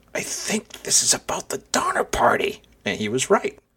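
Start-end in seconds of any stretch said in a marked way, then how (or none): 0.2-2.7 high, hushed whisper. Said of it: "he sort of leans over and he goes".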